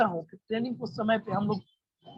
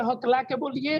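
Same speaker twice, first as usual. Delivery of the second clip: normal talking voice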